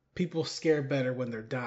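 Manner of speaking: ordinary talk, nothing marked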